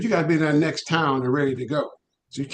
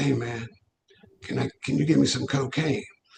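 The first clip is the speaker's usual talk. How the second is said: put-on raspy voice of a jazz musician. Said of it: "he talks like this".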